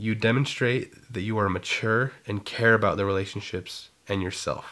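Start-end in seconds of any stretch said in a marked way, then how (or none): none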